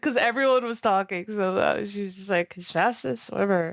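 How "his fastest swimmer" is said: put-on quiet mutter, like an aside. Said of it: "I said it very quietly".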